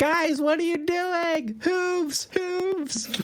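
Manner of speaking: very high, distant yell. In a tabletop game, a player's character calls to the group down the alley, yelling from a distance. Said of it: "I'm gonna yell from where I am".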